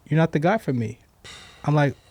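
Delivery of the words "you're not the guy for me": plain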